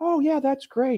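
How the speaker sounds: high-pitched, manipulative nice-guy voice, pitched way up. Imitating an official from a Maricopa hearing: imitating Bill Gates' soft manipulative voice. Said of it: "that soft, manipulative voice".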